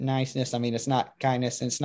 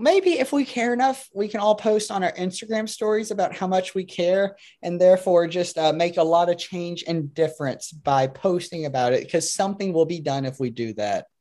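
very slow, drawn-out, pitched-up sarcasm; 6 semitones higher than usual. Answering a question about caring for the outside world: sarcastic. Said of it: "That sounds sarcastic".

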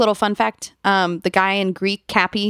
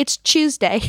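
over-the-top put-on British accent, pitched up; 6 semitones higher than usual. Joking about how British people talk, the speaker mimics them: imitating British people. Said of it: "British people be like".

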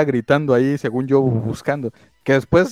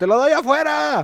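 very high-pitched acted-out yell; 13 semitones higher than usual. Retelling calling out across a crowd to a young man: imitating own past shout. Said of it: "y como según yo grité".

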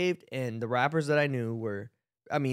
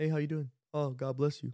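mock unexcited, offhand, flat, low-energy delivery; 2 semitones higher, 4 dB quieter than usual. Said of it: "disappointed at first with how low energy he was".

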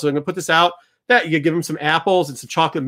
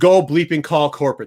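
ordinary talk, nothing marked

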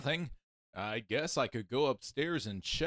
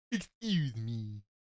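deep but juvenile voice, like a huge creature; 4 semitones lower than usual. Narrator voicing a young giant beast blocking a woman's way: deep but juvenile voice. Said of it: "he said in a deep but juvenile voice".

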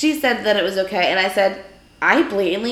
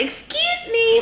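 loud, annoying, obnoxious, shrill and very high-pitched. Retelling cutting in front of a woman, putting on a loud, annoying 'excuse me'. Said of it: "all loud and annoying because I'm a real meanie".

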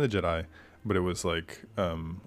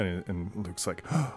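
ordinary talk, nothing marked

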